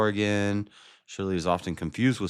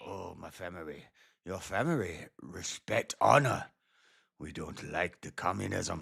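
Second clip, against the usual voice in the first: soft, put-on, samurai-style Japanese accent; 7 dB quieter than usual. Trying out accents with friends, in a put-on Japanese accent. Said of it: "That's a Japanese accent".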